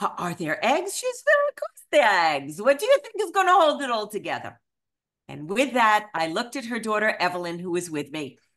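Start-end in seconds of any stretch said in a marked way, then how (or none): 1.5-4.6 awful, loud, swooping, put-on Eastern European accent. Retelling Regina's reply to the speaker's question, in a bad Eastern European accent. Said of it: "the absolute worst Eastern European accent".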